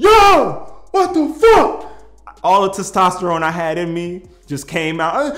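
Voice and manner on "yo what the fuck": acted scream, much higher, louder, slower. Recounting a moment of frustration, the speaker is retelling own screaming. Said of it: "I start screaming like".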